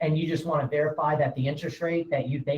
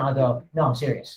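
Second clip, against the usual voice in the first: ordinary talk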